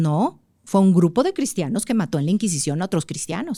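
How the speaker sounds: plain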